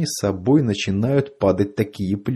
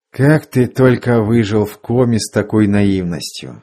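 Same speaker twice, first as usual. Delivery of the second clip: plain reading voice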